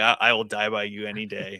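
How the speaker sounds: plain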